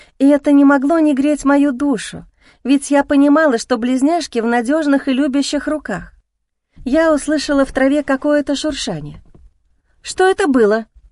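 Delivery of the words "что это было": fearful, frightened. A first-person narrator hears rustling in the grass, frightened. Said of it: "испуганно сказала я".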